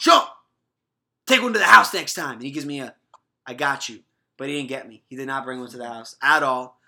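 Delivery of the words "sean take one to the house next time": very loud, high-pitched shouting. Retelling shouting at linebacker Sean Bradley during a game: retelling a shout. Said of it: "I'm shouting at Sean".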